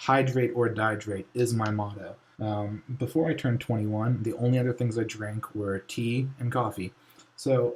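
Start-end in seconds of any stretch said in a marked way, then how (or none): none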